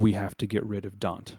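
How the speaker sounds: whispering in a character voice. Voicing a general who turns to a player: whispering in character. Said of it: "he'll whisper to you".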